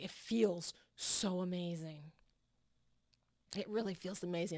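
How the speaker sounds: holding back tears. Sharing how a writing technique transformed everything: emotional, holding back tears. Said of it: "that gets me emotional".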